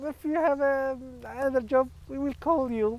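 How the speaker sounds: very high, gentle, polite, evasive tone. Showing how a boss politely turns down a job applicant: imitating a polite Swedish boss. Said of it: "You will say it in this Swedish way".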